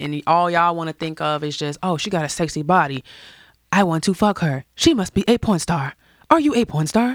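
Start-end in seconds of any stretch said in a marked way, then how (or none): 2.0-7.2 put-on robot voice. Imitating how people sound in the comments, in a robot voice. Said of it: "like robot show".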